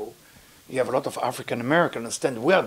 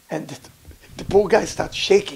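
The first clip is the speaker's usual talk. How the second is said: usual speaking voice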